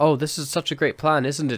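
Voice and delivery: put-on, over-the-top sarcastic voice. Retelling Ian's joke to the Dalek: imitating Ian's over-the-top sarcasm. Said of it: "he plays it so over the top".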